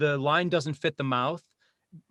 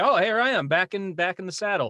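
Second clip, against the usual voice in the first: high, loud, bright, cheerful voice. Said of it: "the next day it's like".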